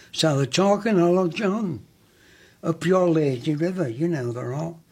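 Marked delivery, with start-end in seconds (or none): 0.9-3.8 put-on Scouse accent, Liverpool style. Retelling how the people in the line talked, Liverpool accent. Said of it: "with the Liverpool accent".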